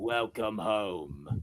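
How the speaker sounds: very low, sinister voice, "home" drawn out. Imitating how Ozai greets someone: sinister serious Ozai voice. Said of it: "it's a lot more sinister and serious".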